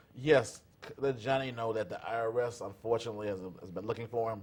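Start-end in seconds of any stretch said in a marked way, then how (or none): none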